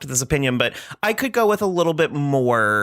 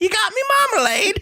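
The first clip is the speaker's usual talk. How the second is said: very high-pitched put-on Cockney accent. Recalling how a woman spoke at a premiere, imitating her attempted cockney accent. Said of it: "trying to do like a Cockney accent".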